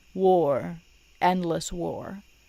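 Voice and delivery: normal talking voice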